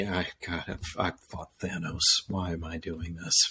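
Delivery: mock mumbling under the breath. Retelling a comment made during a pretend fight: imitating Hawkeye muttering under his breath. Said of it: "the comment under his breath".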